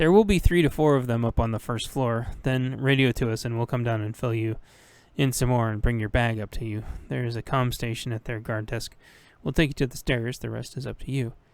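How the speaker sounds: ordinary delivery, nothing marked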